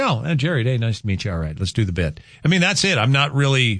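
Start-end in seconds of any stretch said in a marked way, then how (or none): none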